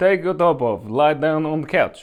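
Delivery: bad put-on Polish accent, somewhat Slavic. Retell what the woman giving you a massage said, in a bad Polish accent, a little Slavic. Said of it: "It's a little Slavic".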